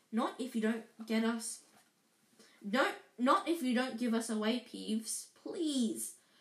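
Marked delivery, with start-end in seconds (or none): none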